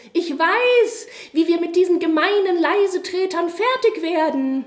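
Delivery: high, tiny, squeaky mouse voice, trumpeted out loud. Narrator reading a fable where a young mouse jumps up to speak; squeaky little voice. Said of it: "trompetete mit seinem Piepsstimmchen".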